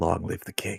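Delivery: whispering. Commenting on a match, voicing a player whispering to himself, whispering as Core. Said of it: "whispering to himself".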